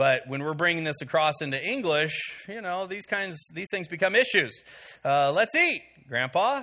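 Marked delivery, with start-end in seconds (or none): 5.0-6.6 put-on short pause before "grandpa". Showing how a comma changes meaning: short pause before 'grandpa'. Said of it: "You put a little pause in there".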